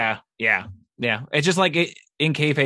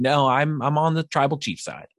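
ordinary talk

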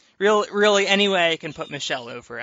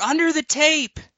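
shrill, shouted-out voice; 12 semitones higher, 3 dB louder than usual. Retelling yelling a rule reminder across the room: imitating own past yell. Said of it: "so I yell over".

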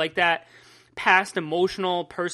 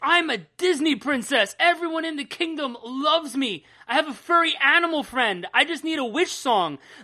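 all-out, high-pitched screaming tirade; 7 semitones higher than usual. Recapping a comic where she screams at Topaz, retelling a character screaming. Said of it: "she just starts screaming at Topaz".

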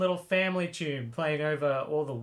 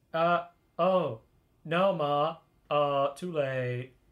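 very slow, dragging, bland half-hearted delivery. Retelling a film character's line to the mother: imitating a half-hearted line. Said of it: "the most, like, half-hearted line".

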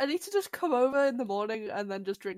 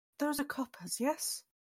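hushed, theatrical stage whisper meant to carry; 4 semitones higher, 7 dB quieter than usual. Playing a character checking coins with the vendor, in a stage whisper. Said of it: "meaning to whisper, but stage whispers".

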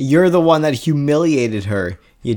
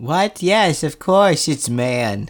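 put-on Polish accent; 3 semitones higher than usual. Retelling a tv scene, quoting a suspect's reply: put-on polish accent. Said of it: "Your Polish accent is really good".

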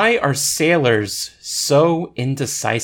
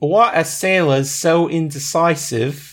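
fake British accent, higher pitch; 4 semitones higher than usual. Retelling a sailor joke after another speaker asks for a British accent: put-on British accent. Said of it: "that would probably be funnier with a British accent".

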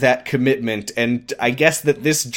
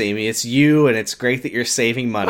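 usual speaking voice

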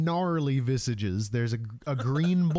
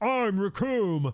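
posing battle-cry call, shouted out, pitched up; 5 semitones higher than usual. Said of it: "He does a pose and he shouts".

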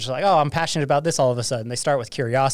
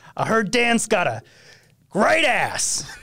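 slow, drawn-out, pitched-up, swooping pitch; 9 semitones higher than usual. Imitating a celebrity thanking a fan for a card: Al Pacino impression. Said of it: "that was the last time I'll do a Pacino impression".

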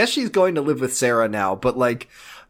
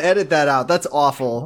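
ordinary delivery

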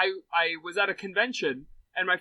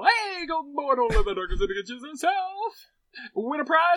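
loud fairground barker call; 9 semitones higher, 4 dB louder than usual. Mimicking how the co-host just said a line, in a carnival barker voice. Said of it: "You said it like a carnival barker".

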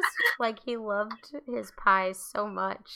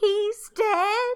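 very high, loud sobbing scream; 11 semitones higher, 6 dB louder than usual. Speaker recalls her childhood reaction at a grave, retelling a crying scream. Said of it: "I collapsed and cried screaming".

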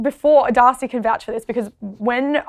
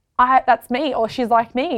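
normal talking voice

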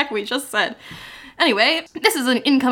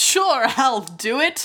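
put-on Scottish accent. Storyteller voicing the big game hunter accepting the case: Marmaduke Wetherell Scottish accent. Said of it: "he's the only one with a Scottish accent".

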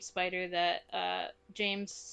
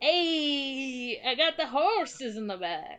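mock Southern-New York voice, higher and louder; 5 semitones higher, 5 dB louder than usual. Joking about a fabled Southern New Yorker, put-on Southern New Yorker accent. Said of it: "The fabled Southern New Yorker".

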